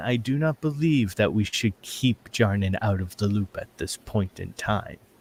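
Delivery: slightly hushed voice. A character looks back at the captain to speak, in a slight hushed tone. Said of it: "kind of in a slight hushed tone".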